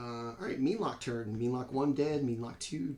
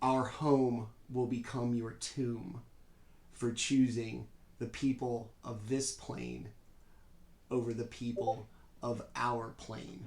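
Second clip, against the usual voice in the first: eerie, creeping, creepy deep monster voice; 2 semitones lower than usual. Narrating the scene, the speaker voices the flower attacking Laurence, creepy deep voice. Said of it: "the same creeping, creepy, deep voice".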